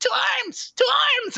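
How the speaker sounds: small, tiny, very high, fey squeak. Narrating a story, the mallows and butter call out: small little fey voice. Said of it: "in a small little little fey voice".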